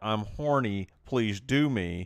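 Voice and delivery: slow, angry, put-on yandere voice. Joking about a scene, acting the girl's line: imitating an angry yandere voice. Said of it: "in an angry Yandra voice".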